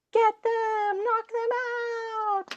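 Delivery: very high, stretched-out tiny-critter voice. Narrating a sudden attack, the game master voices an attacker in a high-pitched voice. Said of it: "a high pitched voice being like".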